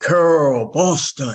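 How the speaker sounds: mock mild, hearty announcing call. Retelling a man calling out her name as she walks into the room: booming voice. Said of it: "this booming voice comes across and he goes".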